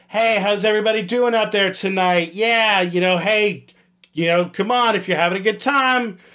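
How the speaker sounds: forced, awkward, emcee-style banter delivery. Speaker acts out the banter they'd give a crowd: forced awkward stage banter. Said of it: "It's almost like please clap energy".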